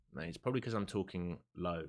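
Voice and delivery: ordinary talk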